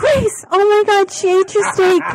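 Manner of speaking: very high, loud, shouted yell. Retelling a prank about his steak, calling out about grace: retelling a yell. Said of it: "And I yelled".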